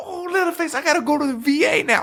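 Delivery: very high, obnoxious shout. Imitating an obnoxious character shouting at Leatherface: imitating Chop Top shouting. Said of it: "He's shouting things".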